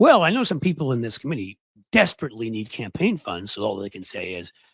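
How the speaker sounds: ordinary talk, nothing marked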